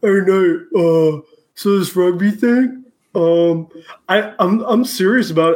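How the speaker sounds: dopey, dumb big jock voice. Imitating an athlete texting a former teammate: dumb big jock voice. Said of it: "dumb jock, dumb big jock".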